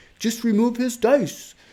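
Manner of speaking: weak, bad German accent, pitched very high. Imitating Bassmaster's voice in the back of the head: imitating Bassmaster in German accent. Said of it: "That's not even a good German accent at all".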